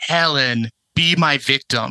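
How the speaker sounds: very slow, drawn-out, seductive delivery. Quoting a horror villain's famous line, seductive Tony Todd delivery. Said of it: "it's so seductive".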